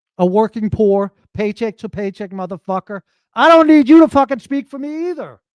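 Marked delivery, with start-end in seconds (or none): 3.3-5.3 full-on, loud shouting outburst. Speaking right into a nearby listener's ear, yelling. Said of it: "didn't mean to yell into your ear".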